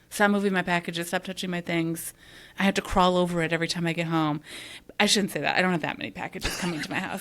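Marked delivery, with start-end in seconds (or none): none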